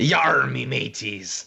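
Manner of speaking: salty put-on pirate voice. Welcomed onto the show, greeting everyone in pirate voice. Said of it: "I've been wanting to talk like a salty pirate".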